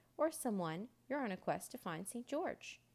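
ordinary delivery

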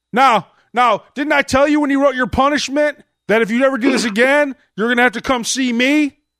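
stern, high, loud scolding like a strict principal.

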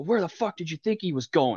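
play-acted, high, angry shouting. Retelling a dad watching a shootout: imitating a dad yelling at the TV. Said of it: "my dad's yelling at the T V".

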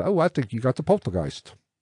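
bad, clumsy, half-baked British accent. Retelling what a man told Peggy, in a bad British accent. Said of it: "At least my British sucked, but it wasn't Australian".

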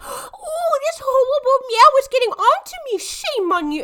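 put-on baby talk, very high and drawn-out. Retelling how a girl talks to her brother: imitating a put-on baby voice. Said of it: "she puts on a baby voice for her brother".

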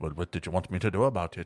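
put-on quirky Irish accent. Retelling a movie scene: Jeffrey Dean Morgan's funky Irish accent. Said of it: "this funky Irish accent".

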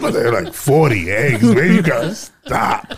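irate, angry farmer voice. Joking about stealing eggs, doing an impression of the mad farmers. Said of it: "That's my impression of them".

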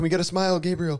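high-pitched loud calling out. Retelling paparazzi calling out on the carpet, imitating photographers yelling. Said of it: "they're screaming at you".

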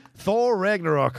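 fake New Zealand accent. Announcing number two in a superhero sequel countdown, in an attempted new zealand accent. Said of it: "I'm trying to do the New Zealand accent".

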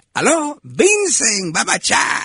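put-on heavy Cuban accent, very high-pitched and swooping. Retelling how friends kept calling a man to hear him answer: thick Cuban accent. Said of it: "He had a thick Cuban accent".

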